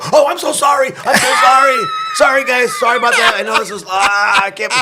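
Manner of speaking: flustered, high, gushing. Retelling apologizing to a quiet group over a sound only they heard: retelling own flustered apology. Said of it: "and then you hear me go".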